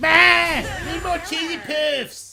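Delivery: very high, slow, squealing impression voice. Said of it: "I should do a fantastic Cartman impression".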